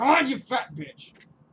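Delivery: loud, slow, high, furious, raging yell.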